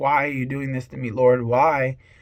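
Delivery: put-on sobbing, upset. Retelling a plea to the Lord as a son rides in an ambulance: retelling crying, upset. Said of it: "and I'm crying, and I'm upset".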